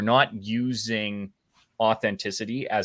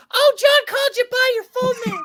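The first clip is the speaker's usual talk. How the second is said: high, shrill, loud motherly exclaiming voice; 8 dB louder than usual. Imitating a mother listening back to this talk: impersonation of my mother. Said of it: "a dead ringer impersonation of my mother".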